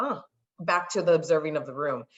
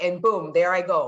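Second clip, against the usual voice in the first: ordinary talk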